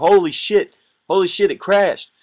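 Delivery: very high, drawn-out, terrified, panicked scream. Retelling seeing sparks on the runway: retelling a panicked scream. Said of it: "I'm just screaming up there".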